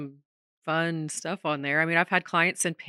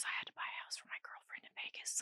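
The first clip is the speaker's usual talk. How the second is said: mock whisper, quieter. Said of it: "and he was whispering".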